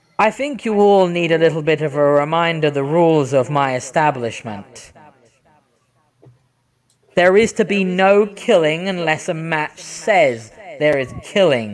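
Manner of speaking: voice that echoes as it speaks. Narrating a scene where everyone freezes, voicing someone heard in their heads, echoing voice. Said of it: "this voice that seems to echo as they speak".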